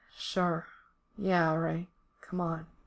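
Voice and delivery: lazy, slow, seductive, sultry drawl. A man answers the other man's request, in a sultry drawl. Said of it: "Mikey drawls, his voice sounding like fucking sex".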